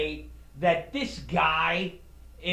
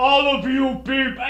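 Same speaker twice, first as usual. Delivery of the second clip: fake American accent, higher, louder, faster; 7 semitones higher, 8 dB louder than usual. Speaker imitates a guy from a dorm room debate, fake american accent. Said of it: "speaks with an American uh, uh, voice".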